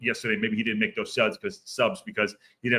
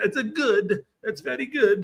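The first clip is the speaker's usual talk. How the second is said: very high, bad sing-song voice, pitch swinging wildly; 14 semitones higher than usual. Praising a cheap player signing: horrible Borat impression. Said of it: "that was my horrible impression of".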